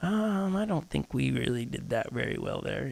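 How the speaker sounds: very soft, hushed, gentle, kind, calm voice. Retelling how Holly pulled the speaker aside: imitating a kind, gentle, calm voice. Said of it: "in her kind, gentle, calm, still voice".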